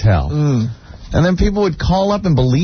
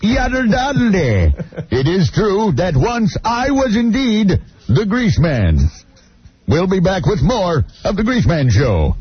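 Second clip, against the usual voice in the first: radio host voice, selling it; 2 semitones higher than usual. Answering a listener who asked if Anthony was the Grease Man, in a Grease Man voice. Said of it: "sounds a lot like the Grease Man voice".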